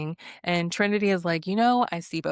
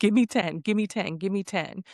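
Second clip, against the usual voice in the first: put-on angry outburst tone. Retelling how Mel, pissed off, marched around the villa: imitating someone angrily. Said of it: "Mel was all pissed off at Bea and marching around".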